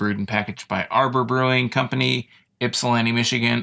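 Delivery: ordinary talk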